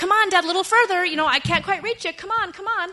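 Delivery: high, loud coaxing call.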